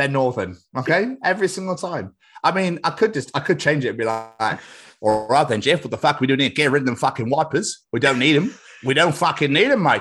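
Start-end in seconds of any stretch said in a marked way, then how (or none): 5.0-10.0 fake Australian accent throughout. Joking about changing a character away from Yorkshire: put-on Australian accent. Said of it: "I love your Australian accent".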